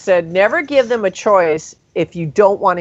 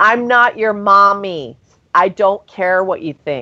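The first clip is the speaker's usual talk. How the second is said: mock blunt, no-nonsense, emphatic scolding. Retelling what was said to a misbehaving girl: retelling saying it very loudly. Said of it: "I said very loudly".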